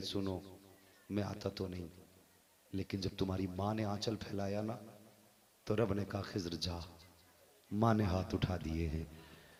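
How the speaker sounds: hushed, gentle, very soft voice.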